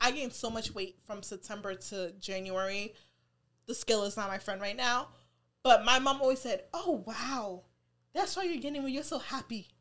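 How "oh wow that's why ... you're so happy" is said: upbeat, positive, quieter. Retelling what mom always said about the weight gain: imitating mom, said positively. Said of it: "she said it in a positive way".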